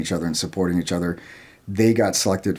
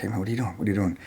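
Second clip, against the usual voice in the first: soft, hushed stage half-whisper; 5 dB quieter than usual. Retelling asking one of the guys who stood up what he's doing: retelling a half-whisper. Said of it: "I was whispering".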